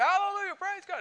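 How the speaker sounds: put-on screaming. Telling a story, the speaker acts out a man bursting through the doors; retelling a scream.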